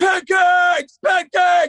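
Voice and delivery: screamed all-out, very high, shrill, full volume. Retelling a classmate shouting out in the middle of a lecture, retelling a scream. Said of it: "he would just scream it out as fucking loud as he could".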